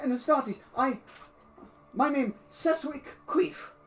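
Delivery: high-pitched, panicked, groveling peasant voice. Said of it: "panicked and withered".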